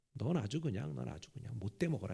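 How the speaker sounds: low, quiet, creaky muttered cursing.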